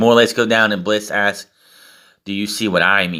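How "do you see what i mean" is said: put-on deep, serious voice. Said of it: "In a very deep and, um, serious voice".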